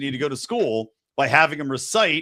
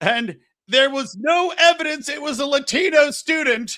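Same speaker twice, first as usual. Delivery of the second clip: acted-out shrill shout, very high, slow, drawn-out, loud; 12 semitones higher than usual. Retelling a cartoon scene, the principal's sudden line: imitating someone loudly yelling. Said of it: "then he loudly yells".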